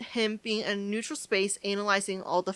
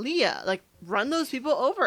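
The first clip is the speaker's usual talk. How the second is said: ordinary delivery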